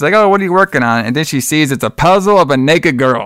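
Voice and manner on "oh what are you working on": high, all-happy motherly voice. Telling a story, voicing the kid's mom as she walks in, imitating a happy mom. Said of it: "all happy and stuff".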